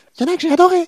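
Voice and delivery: very high-pitched, very loud, delighted enthusiastic voice. Explaining how their voice shifts when they like something, high-pitched voice. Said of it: "je prends une voix aiguë quand j'aime".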